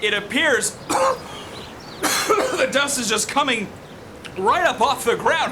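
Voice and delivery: words pushed out through repeated coughing fits.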